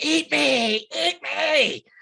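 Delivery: screaming at full volume, very high, very slow. Voicing a warrior charging with raised cleaver: shouting at the top of his lungs. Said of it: "shouting at the top of his lungs".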